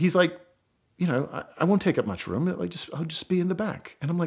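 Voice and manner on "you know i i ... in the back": soft, charming put-on British accent. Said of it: "imagine that in a charming British accent".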